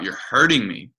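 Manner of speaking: put-on acted old woman voice, sudden screamed outburst. Retelling a scene from a show, an old woman's line: imitating a scream. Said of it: "just screams out".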